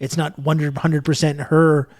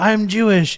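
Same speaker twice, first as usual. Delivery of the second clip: mock tearless sobbing, pitched much higher; 6 semitones higher than usual. Describing a woman in a video, acting out her words: imitating fake crying. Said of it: "like fake crying".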